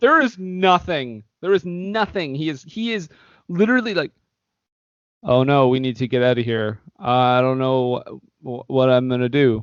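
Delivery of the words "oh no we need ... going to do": mocking wooden, badly acted delivery, lower. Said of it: "it's that level".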